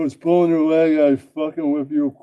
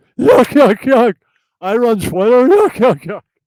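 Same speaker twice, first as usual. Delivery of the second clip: high, loud, raised puppet voice; 8 semitones higher, 7 dB louder than usual. Voicing a puppet playing Elon Musk: Jesse P S puppet voice. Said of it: "the Jesse P S puppet will be Elon Musk".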